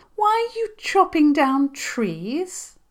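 put-on very high, sweet little girl voice. Reading a story, a little girl questions five pirates in a sweet little girl voice. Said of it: "in what she hoped was a sweet little girl voice".

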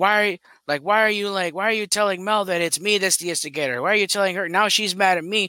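mock heated, angry, accusing tone. Retelling how Booster yelled at Charles: imitating Booster yelling. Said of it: "Booster yelling at Charles".

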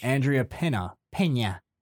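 anglicized pronunciation of a name. Reading out a listener's name, saying a name like a colonist. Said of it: "you say her name like a".

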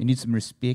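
put-on Kiwi-like accent. Repeating a phrase while another speaker remarks on the accent: New Zealand-sounding accent. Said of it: "like you're from New Zealand or something".

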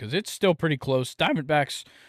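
cracking voice. Picking the National League's third playoff spot, voice cracking. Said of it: "voice crack".

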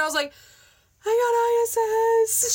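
very high, bawling, sobbing crying wail. Retelling a phone call with mom, imitating past self bawling. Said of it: "I'm bawling".

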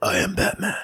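whispered, breathy superhero voice. Joking about the Batman movies, quoting the hero: Batman voice. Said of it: "every time you guys make that voice".

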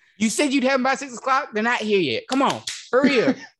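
pushy, demanding boss voice, pitched high, pressing hard. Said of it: "And then [name] would be like".

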